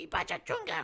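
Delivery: loud, made-up goblin gibberish. Voicing the goblin answering the player: goblin speaking Goblin. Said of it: "And he says".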